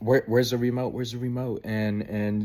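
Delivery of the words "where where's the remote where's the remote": mock frantic, panicked, rushed, freaking-out voice. Retelling how mom reacted to a text: imitating someone freaking out. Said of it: "she started freaking out".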